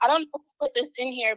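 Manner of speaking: ordinary talk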